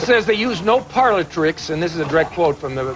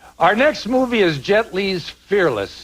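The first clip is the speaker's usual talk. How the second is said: put-on American accent; 3 semitones higher than usual. Introducing the next film, the speaker switches to an american accent. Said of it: "I'll use my American accent to introduce the next film".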